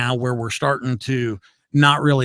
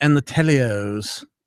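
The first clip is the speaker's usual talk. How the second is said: English accent. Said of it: "Why do I say it with an English accent?".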